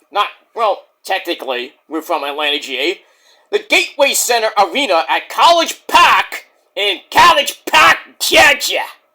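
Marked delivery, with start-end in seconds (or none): 3.5-8.8 put-on New York accent, pitched up. A host announcing where the show is from, said in a New York accent. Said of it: "I said that with a New York accent".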